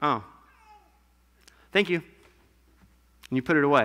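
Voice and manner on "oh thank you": flat, ungrateful-sounding tone. Acting out opening a family member's Christmas present: unappreciative thank-you. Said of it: "is that a tone of appreciation? No".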